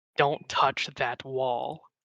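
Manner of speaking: severe, no-nonsense, super stern tone. Acting as Ingrid, turning toward a man before he acts, super stern voice. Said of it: "in this like super stern voice".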